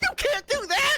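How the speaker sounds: squealing in a very high register. Retelling what a jealous man said to the speaker: high-pitched squealing voice. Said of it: "squealing with a high-pitched voice".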